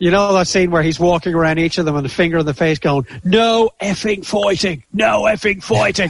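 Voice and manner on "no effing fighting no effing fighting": drawn-out, firm, high-pitched roaring shout. Quoting a Peaky Blinders scene he roars when on mute, retelling a roaring shout. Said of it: "I'm roaring that through the door".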